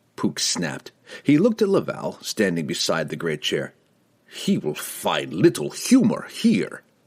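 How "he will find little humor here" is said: slow, pitched-up voice laced with venomous chuckle. Reading the guildmaster's remark about a prisoner, said with a venomous chuckle. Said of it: "the guildmaster said with a venomous chuckle".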